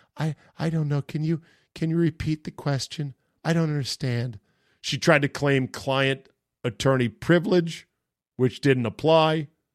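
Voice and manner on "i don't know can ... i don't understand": put-on little, mousy, small timid voice. Retelling how she answered questions in court, imitating a little mousy voice. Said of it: "said in a little mousy voice".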